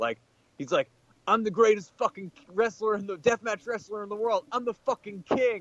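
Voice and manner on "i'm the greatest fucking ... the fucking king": put-on very high-pitched, hollering, boastful screaming. Retelling a wrestler whose microphone would not work, the speaker imitates him screaming at everybody. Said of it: "he just starts screaming at everybody".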